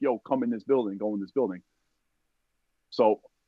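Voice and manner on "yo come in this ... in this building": plain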